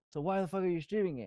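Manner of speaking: loud high-pitched yelling. Retelling what an ex-community manager yelled during a stream: imitating someone yelling. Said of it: "he's yelling at me".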